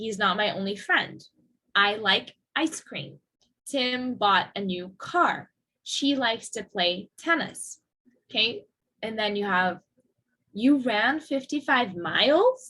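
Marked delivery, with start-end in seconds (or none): 10.5-12.7 pitch rises at the end on miles. Intonation practice sentence ending in right: rising pitch at end on miles. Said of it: "It goes up".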